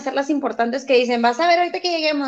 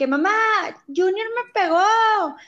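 acted-out shout at a higher pitch; 6 semitones higher than usual. Retelling how, as a child, he shouted to his mother about his brother: retelling a childhood shout. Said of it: "o yo gritaba de que".

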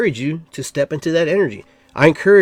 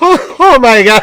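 very loud, high words bursting through laughter; 8 semitones higher, 9 dB louder than usual. Leading others in a laughing exercise, laughing while talking. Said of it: "Just laugh".

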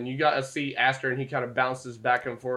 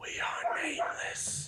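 breathy, hushed, whispered tree voice; 7 dB quieter than usual. The speaker relays what the nameless trees say; tree's voice. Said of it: "You hear the tree's voice".

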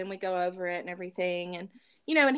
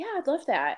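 put-on sweet voice, much higher and faster; 8 semitones higher than usual. Retelling his answer to the speaker's lunch invitation, imitating him saying it sweetly. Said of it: "he so sweetly said".

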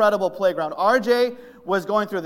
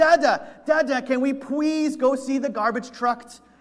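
put-on frantic begging child voice, higher pitch; 5 semitones higher than usual. Retelling how a three-year-old squirmed and begged: imitating RJ frantically begging. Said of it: "frantically saying".

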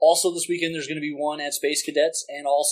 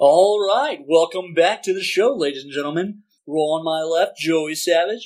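radio-style, announcer-like host voice; 4 dB louder than usual. A co-host, asked for his podcast voice, opens the show; podcast host voice. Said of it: "podcast voice, now".

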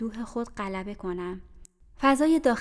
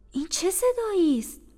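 astonished, surprised, very high exclamation; 9 semitones higher, 3 dB louder than usual. Narrator reads Abbad's question as he enters the room, surprised. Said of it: "عباد با تعجب گفت".

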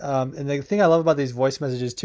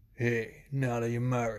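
put-on deep gravelly voice, quieter; 8 dB quieter than usual. Praising another speaker's voice and copying it: imitating Chris's deep gravelly voice. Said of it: "that deep, gravelly voice".

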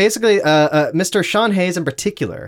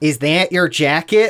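put-on Chicago accent. Recalling a live show episode, the speaker quotes her line in Lauren Lapkus Chicago accent. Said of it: "slipped into her Chicago accent".

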